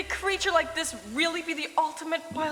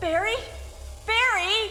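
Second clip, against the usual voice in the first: cried out, high-pitched; 6 semitones higher than usual. A game character calls out to someone, screaming. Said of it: "she's screaming".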